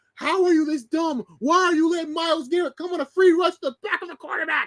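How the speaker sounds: put-on shrill, high scream. Talking about a football game, the speaker reenacts watching it; retelling screaming at the TV. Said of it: "I was screaming at the T V like".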